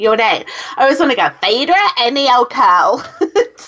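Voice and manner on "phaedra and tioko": bad, put-on American accent. Show host saying her two guests' names, in a bad american accent. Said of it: "Sorry about my terrible uh, American accent there".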